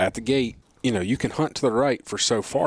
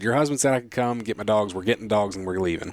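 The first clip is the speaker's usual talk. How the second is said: ordinary delivery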